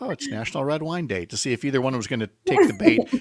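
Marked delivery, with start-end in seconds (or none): 0.0-1.3 hushed, barely-there, very quiet little aside. Retelling a remark made during the commercial break: imitating saying it very quietly. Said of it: "I just said very quietly".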